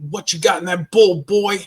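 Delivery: loud, forceful, challenging drill sergeant voice. Retelling breakfast in basic training when the drill sergeant asked: imitating the drill sergeant. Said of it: "And he said it just like that".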